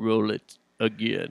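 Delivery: voice dropped low and deep. Retelling an actor's line at a panel in Emperor Palpatine voice. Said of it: "in his Emperor voice".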